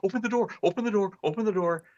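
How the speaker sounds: high, fast, panicked pleading voice. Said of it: "he's like".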